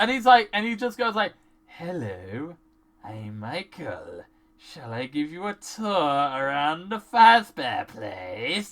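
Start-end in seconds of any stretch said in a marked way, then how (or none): 1.7-8.7 very low, slow, drawn-out creepy killer voice. Describing a game character greeting a TV crew, imitating an obvious serial killer's voice. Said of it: "And he's also talking like this".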